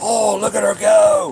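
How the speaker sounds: very high, loud exclamation. Retelling a TV show moment, quoting the host: Steve Irwin impression. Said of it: "he's like".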